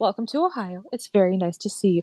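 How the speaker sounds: sweet, courteous, overly polite flight-attendant voice. Retelling walking up to someone as if she'd just landed, playing a flight attendant. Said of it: "And I was her little flight attendant".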